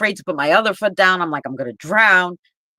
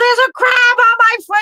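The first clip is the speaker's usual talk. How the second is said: put-on scream, higher pitch and louder; 6 dB louder than usual. Retelling calling to mother about a crab on the foot: imitating own screaming. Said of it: "now I'm screaming for my mother".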